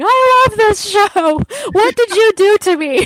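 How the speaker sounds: very high, weepy, sobbing, tearful wail. Retelling how friends would call up about the show, imitating a friend crying. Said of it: "call me up crying".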